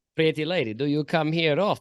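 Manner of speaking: put-on very thick Russian accent. Acting out what he says, speaker delivers it in a very thick Russian accent. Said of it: "with a very thick Russian accent".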